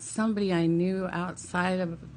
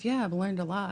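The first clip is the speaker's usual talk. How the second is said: usual speaking voice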